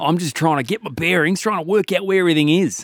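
put-on Australian accent. Acting out an imagined scene as an Australian stranger on a sign: put-on Australian accent. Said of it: "the accent is, uh, throwing me off".

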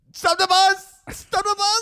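very high-pitched, urgent, repeated yelling. Retelling shouting to the bus driver midway through a bus ride, retelling yelling. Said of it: "I just start yelling".

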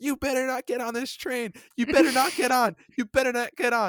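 high, shrill repeated yell. At a near-empty train station, the speaker retells a woman, imitating someone yelling. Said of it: "she's yelling, she's like".

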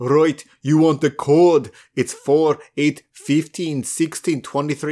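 bad Scottish accent drifting into a Russian sound. Retelling a scene, trying a Scottish accent for Desmond: bad Desmond Scottish accent. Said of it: "Is that still Russian?".

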